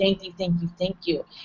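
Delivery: soft, weepy, tearful crying voice. Retelling what their mom said when she met her people, imitating someone crying. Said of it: "and she's crying".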